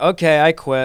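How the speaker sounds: normal talking voice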